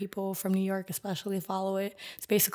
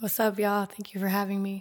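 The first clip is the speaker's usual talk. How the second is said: a little raspy, somewhat husky voice. A guest, just introduced on the 99 Celsius Podcast, greets the host, a little raspy. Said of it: "My voice is a little raspy".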